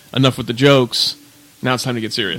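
ordinary talk

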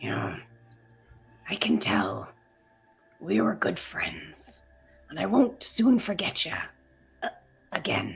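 breathy, slightly quavering voice, near a whisper. Voicing a character saying goodbye to friends: quavering voice. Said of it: "You hear a little quaver in his voice".

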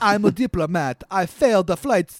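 attempted put-on Jamaican accent that sounds Italian. Showing how the line would sound, attempted jamaican accent that sounds italian. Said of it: "That's Italian again".

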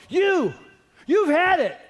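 very high, bluffing brave voice. Retelling facing down two guys outside the dorm, trying to sound brave. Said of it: "in my bravest voice".

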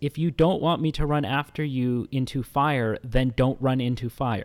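normal talking voice

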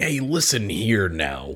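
put-on old-time Western movie hero accent. Telling a co-speaker how he just has that way of talking, put on a Kurt Russell accent. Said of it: "He's just got like that Kurt Russell accent".

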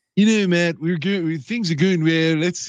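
surfer-ish, stoner-like voice, half country. Imagining the boss telling the coach to step back: Ryan Pace impression. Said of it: "you know how he sounds like he's like a surfer or something".

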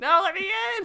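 shrill, very high-pitched screeching scream. Imagining being kept out of an event: screaming to be let in.

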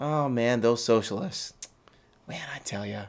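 open sarcasm, meaning the opposite, complaining tone. Speaker talking to folks about a citizenship ceremony: sarcastic. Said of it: "That's sarcasm, folks".

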